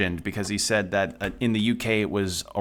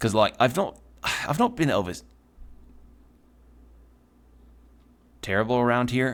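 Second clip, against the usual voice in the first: rough, unpolished put-on Australian accent; 3 semitones higher than usual. Voicing a line during a game playthrough, in a put-on Australian accent. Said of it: "And then there's Australian... is my accent not good?".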